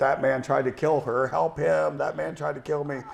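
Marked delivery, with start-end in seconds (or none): 1.3-3.0 play-acted woman's scream, rough, creaky, mild and small. Retelling what a fleeing woman screamed: imitating a woman screaming. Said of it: "she's screaming to help me".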